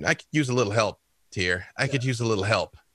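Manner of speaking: hushed whispering. Narrating a character looking out at the stars, voicing a whispered prayer to Tyr. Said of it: "unconsciously sort of whisper a small prayer".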